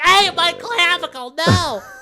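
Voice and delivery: slow, stretched-out, high drawn-out yelling. Retelling what was yelled outside while neighbors watched: imitating own yelling. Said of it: "'Cause I'm yelling".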